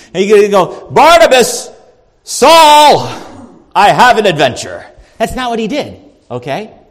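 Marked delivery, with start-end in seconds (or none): 0.9-4.8 booming, slow, swooping, sweeping delivery. Acting out what God didn't say to Barnabas and Saul, God voice. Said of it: "that was my God voice".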